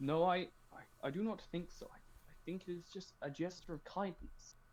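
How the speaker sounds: high-pitched whisper. Answering a tablemate in character about the free drinks: whispering. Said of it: "I whisper back".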